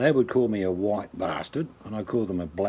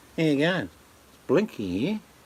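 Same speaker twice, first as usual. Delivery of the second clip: put-on nasal Victorian woman's accent, higher pitch; 7 semitones higher than usual. Describing accents from parts of Victoria, imitating Blinky's nasal Victorian voice. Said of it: "nasal Victorian voice".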